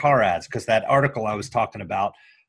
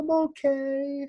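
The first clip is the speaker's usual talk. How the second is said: put-on very high, soft, squeaky little child voice; 5 dB quieter than usual. Retelling a car commercial, voicing the child in the back: little pipsqueaky kid voice. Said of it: "this little pipsqueaky voice".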